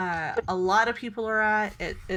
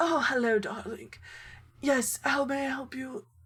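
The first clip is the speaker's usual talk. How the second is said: put-on older woman's voice, pitched up; 5 semitones higher than usual. Narrator voicing an older human woman offering help: older woman voice. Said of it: "this wonderful older woman is just like".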